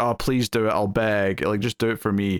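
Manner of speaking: put-on pleading tone. Retelling a scene where a character begs for help: imitating Quark pleading. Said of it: "pleads and begs".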